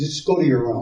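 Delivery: ordinary talk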